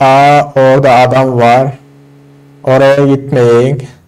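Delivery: deliberately slow speech. Asked by another player to talk slower, speaking slowly. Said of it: "O zaman şöyle konuşurum ha".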